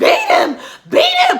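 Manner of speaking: very loud, very high, shrill screaming. Retelling urging on a fight in the yard, retelling own screaming. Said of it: "And I'm screaming".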